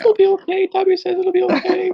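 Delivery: very high, tiny, squeaky elf voice. Imagining his childhood self comforting a crying kid, in a Dobby voice. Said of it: "I sound like Dobby as a kid".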